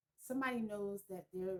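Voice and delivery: plain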